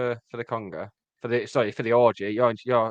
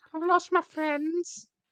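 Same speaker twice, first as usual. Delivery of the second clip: put-on childlike voice. Playing a character in a bit with another speaker, childlike voice. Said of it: "starting to sound more like a child the more I do this voice".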